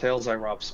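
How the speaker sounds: plain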